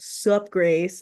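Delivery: extremely deep, low voice, as low as possible. Retelling a phone call, the former nanny quotes the family's oldest boy in a very deep voice. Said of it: "in the most deep voice".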